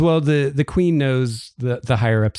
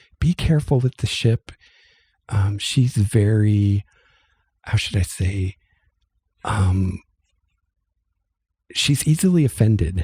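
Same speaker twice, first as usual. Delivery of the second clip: hushed stage whisper; 4 semitones lower than usual. Voicing Druenda warning a player about the ship: half-whispering very quietly. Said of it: "whispers to you very quietly".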